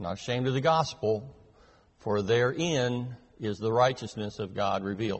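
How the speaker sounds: ordinary talk, nothing marked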